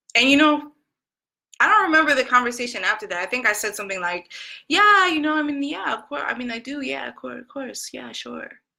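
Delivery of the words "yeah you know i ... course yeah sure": put-on halting, hesitant, unconvincing, unsure rambling. Retelling own reply to a friend's question: imitating own hesitant reply. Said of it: "which means no".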